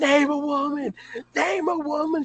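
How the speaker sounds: high-pitched screaming at the top of the lungs. Retelling a man screaming at a high-school-aged girl: retelling a scream. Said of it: "he starts screaming at her at the top of his lungs".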